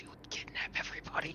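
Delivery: hushed, close, secretive urging whisper. Voicing a character urging a companion to kidnap everybody: whispering in her ear.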